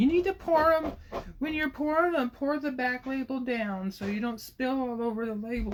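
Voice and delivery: very high, put-on, whiny nagging voice. A husband imitates his wife, who keeps telling him off, in a put-on whiny voice. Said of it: "a husband type thing to like make a whiny voice".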